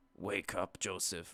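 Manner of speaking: machine-made robotic text-to-speech voice. Imitating a scary text-to-speech voice from a game: imitating a text-to-speech voice. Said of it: "So the text-to-speech voice, that was like".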